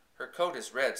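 plain reading voice

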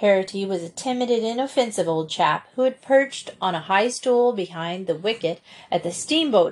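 ordinary delivery

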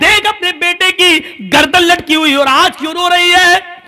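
furious taunting.

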